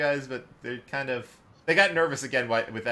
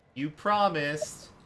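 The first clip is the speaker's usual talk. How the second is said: put-on small, high, childlike little child's voice; 4 semitones higher than usual. Retelling an awkward moment where one speaks in a child's voice. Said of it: "the one does the child's voice again".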